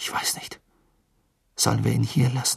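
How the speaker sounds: murmuring. Asking his companion whether to leave someone behind: murmured. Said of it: "murmelte Cedric".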